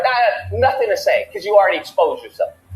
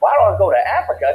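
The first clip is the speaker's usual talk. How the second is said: ordinary talk, nothing marked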